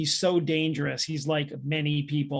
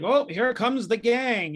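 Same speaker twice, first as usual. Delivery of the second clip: put-on wrestling announcer voice, higher and slower; 8 semitones higher, 3 dB louder than usual. Recalling a wrestler's entrance, imitating the wrestling announcer. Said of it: "you hear the announcer be like".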